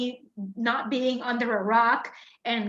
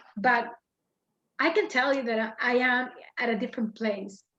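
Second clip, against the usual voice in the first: choked-up voice, catching with emotion. Speaker getting emotional while talking about their team's struggles, choked up. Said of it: "I'm getting emotional just talking about it".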